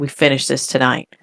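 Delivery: normal talking voice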